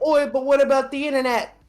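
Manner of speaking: very high put-on Kiwi accent, belted out. Acting out New Zealanders at a town hall meeting: imitating New Zealanders, Australian-type accent. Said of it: "they kinda have, like, an Australian accent".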